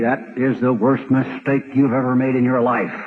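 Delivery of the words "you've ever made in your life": ordinary talk, nothing marked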